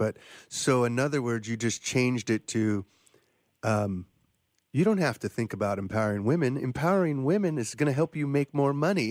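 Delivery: slightly sarcastic tone with swooping pitch. Speaker explaining to listeners how a framing was changed, slightly sarcastic. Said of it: "I'm being slightly sarcastic here".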